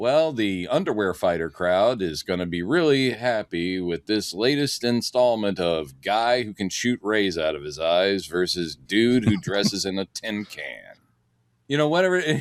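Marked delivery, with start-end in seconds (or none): none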